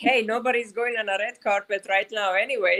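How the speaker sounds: ordinary talk, nothing marked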